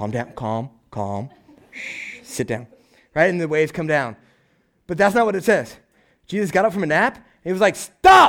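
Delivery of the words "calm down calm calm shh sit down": whispered, very quiet, soft, slow, calming hush. Retelling the Bible story of the storm on the boat: acting out Jesus soothingly shushing. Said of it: "Jesus is on the boat and he's like".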